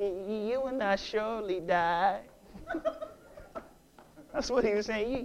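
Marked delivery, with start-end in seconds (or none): 0.0-2.2 soft, slick pimp voice. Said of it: "I'm gonna try my pimp voice".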